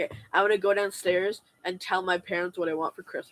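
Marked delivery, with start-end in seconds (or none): none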